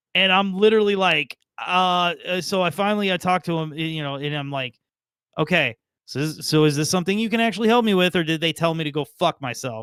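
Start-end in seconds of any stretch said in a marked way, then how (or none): none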